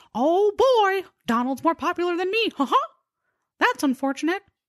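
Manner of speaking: squeaked out, way up high. Telling toy history, speaker voices what Mickey Mouse was thinking: Mickey Mouse voice. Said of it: "my best impersonation of Mickey Mouse".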